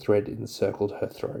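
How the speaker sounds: plain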